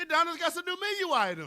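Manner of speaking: very high, shrill, swooping annoying yell. Imitating a mukbanger ripping a bag open, imitating John Loves Food yelling. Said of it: "he yells it in that annoying ass voice".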